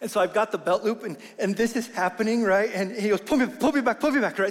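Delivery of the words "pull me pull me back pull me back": mock nervous, fearful, frightened child's voice. Retelling a child's plea while leaning out over an edge: imitating a frightened child. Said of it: "nervousness and fear happens".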